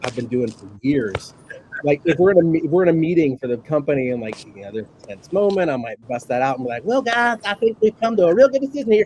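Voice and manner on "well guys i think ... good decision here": effeminate theater teacher voice, pitched very high. Showing the voice he busts out in tense company meetings: effeminate theater teacher voice. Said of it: "the effeminate high school theater teacher".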